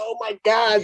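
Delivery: put-on really high-pitched girly scream, goosebumps and all. Retelling own reaction to a surprising text: imitating own high-pitched scream. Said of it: "I kinda screamed really high pitched like a girl".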